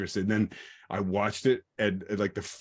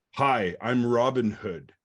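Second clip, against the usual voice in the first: put-on flat American actor voice; 2 semitones higher, 3 dB louder than usual. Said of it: "no British accent".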